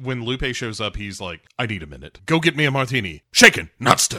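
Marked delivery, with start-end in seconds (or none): 1.6-4.2 irritated, dismissive, angry, loud and rising. Retelling a film scene, imitating James Bond angrily. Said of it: "this is where Bond angrily".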